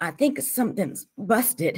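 gasped out. TJ, badly hurt, finally answers Stacy; gasping. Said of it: "he gasped finally".

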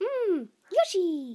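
high-pitched, swooping video-game creature voice. Voicing a toy guest tasting a cookie: Yoshi voice. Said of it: "That was Yoshi's thoughts".

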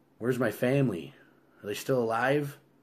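ordinary talk

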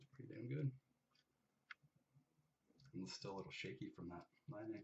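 very quiet mumble through chewing gum. Reacting to a card pull while opening a case, talking while chewing gum. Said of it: "The gum in your mouth, what'd you say?".

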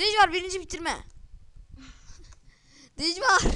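high, loud, excited triumphant cheer.

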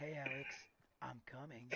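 mimicked slow delivery. Retelling a cousin's mimicry of how a line was said; mimicking a slow delivery. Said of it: "This is the way you said it".

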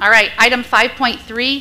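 loud, slow teacher voice.

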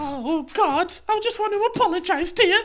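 frantic panic pitched very high. Responding to the roaster after being teased, mock panic. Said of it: "I'm panicking now".

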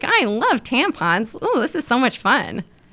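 mock ghoulish cheer, high and swooping, creepy. Retelling what a photographer said during a shoot: imitating a ghoulishly upbeat attitude. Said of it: "really sort of ghoulishly upbeat attitude".

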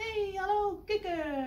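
bright, loud, happy cheerful calling out. Reading a children's story aloud, the duck skating up to the frog: calling cheerfully. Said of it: "riep ze vrolijk".

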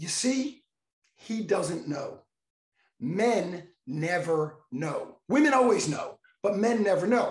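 slow, drawn-out stage whisper. Retelling what a woman they sat with told her husband: retelling a stage whisper. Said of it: "in a stage whisper".

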